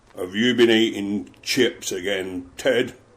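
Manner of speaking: rough, gruff man's voice. Retelling Barry questioning a man banned from fried food, Barry's very gruff voice. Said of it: "in his very gruff voice".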